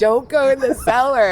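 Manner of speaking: screaming high and loud.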